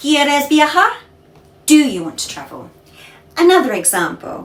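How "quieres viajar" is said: question intonation, higher pitch. Demonstrating how spanish intonation turns a statement into a question, question intonation. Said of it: "Instead of".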